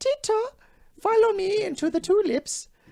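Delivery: clumsy, bad Jamaican accent, very high-pitched. Trying accents for the others: bad jamaican accent. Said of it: "That's Jamaican".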